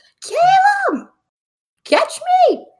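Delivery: very high, loud, shrill, swooping yell. In a game, her character runs straight at Caleb, yelling. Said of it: "And just yells".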